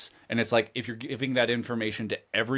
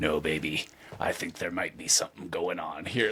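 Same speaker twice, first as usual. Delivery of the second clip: mock hard-boiled delivery, lower and quieter; 6 semitones lower, 5 dB quieter than usual. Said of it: "he really sells it even from that hard-boiled angle".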